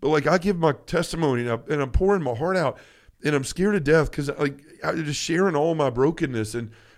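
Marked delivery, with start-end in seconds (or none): none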